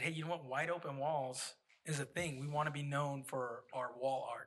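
ordinary delivery

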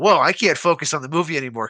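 ordinary talk, nothing marked

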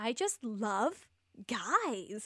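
put-on Australian accent in a woman's voice. Imitating what Moira said: imitating Moira in an Australian accent. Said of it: "That's perfect".

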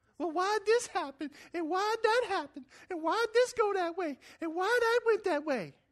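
very high put-on girly voice. Acting out someone's repeated questions during a talk, in a high girly voice. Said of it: "It's the best girl voice I got".

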